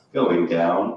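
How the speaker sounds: very low, sultry, sensual voice. Joking about being single, quoting an elevator; imitating a sensual voice. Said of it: "it said in a sensual voice".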